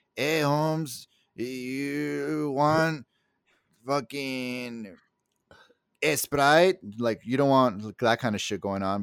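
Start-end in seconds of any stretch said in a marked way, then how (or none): 0.2-6.8 clumsy, bad fake Mexican accent, very slow.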